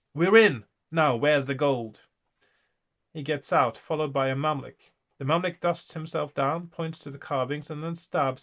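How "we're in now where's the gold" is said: very loud, bellowing goblin yell. Narrator voices a goblin popping up through the floor: shouting goblin voice. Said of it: "as the goblin shouts".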